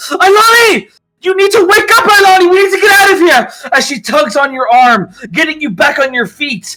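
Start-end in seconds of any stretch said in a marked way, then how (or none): 0.1-3.7 urgent yelling, shrill, loud and very high. A storyteller voices a woman shaking the listener awake to escape, yelling. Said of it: "yelling in your face".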